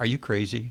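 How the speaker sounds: slightly squeaky little voice. Retelling the wife's answer to the big decision: imitating wife's squeaky little voice. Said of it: "that squeaky little voice".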